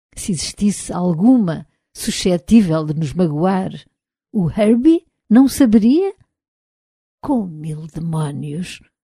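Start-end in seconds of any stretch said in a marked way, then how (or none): 7.3-8.8 low, murmured, muttered under the breath. Bogart reacts to the argument about the robot Herbie, murmured. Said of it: "murmurou Bogart".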